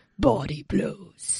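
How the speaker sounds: slow, soft, deep movie-hero voice.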